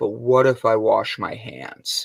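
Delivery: low, slow, earnest, dead-serious tone. Retelling a little girl's question about touching dinosaur bones: imitating a deadpan child. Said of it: "face is straight as can be".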